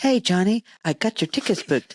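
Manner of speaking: put-on sultry assistant voice. Imagining a brain implant assistant booking flights: imitating a sexy AI assistant voice. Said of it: "it'll be a nice, sexy voice".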